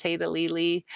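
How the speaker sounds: normal talking voice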